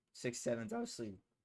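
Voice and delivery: voice cracking and breaking, very high-pitched. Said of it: "excuse my voice crack again".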